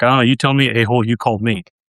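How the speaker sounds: rude, rude-sounding delivery. Retelling how he answered an unknown caller: imitating himself being rude. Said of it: "this is kinda where it gets a little colorful".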